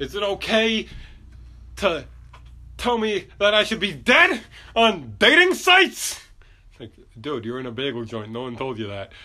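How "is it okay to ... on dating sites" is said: very high, rising, climbing scream. Retelling a man's outburst in a bagel joint, retelling a man screaming. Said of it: "he's screaming like".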